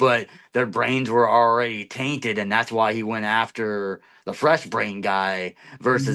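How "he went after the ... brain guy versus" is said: ordinary talk, nothing marked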